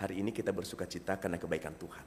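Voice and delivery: low, level, flat monotone with no variation. Explaining how tone shapes a message, saying a line in flat monotone delivery. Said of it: "Flat ya".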